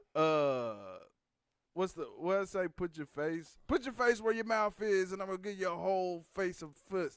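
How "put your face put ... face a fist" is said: hyped-up pro-wrestling promo style, taunting trash talk. Trying out a wrestling-style promo line: wrestling promo trash talk. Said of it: "that's a good W W F".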